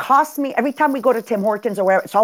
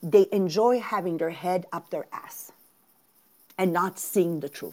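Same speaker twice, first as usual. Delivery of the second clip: voice brought down low; 5 semitones lower, 8 dB quieter than usual. Addressing listeners and dropping to a lowered voice for an old expression. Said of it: "I'm going to lower my voice".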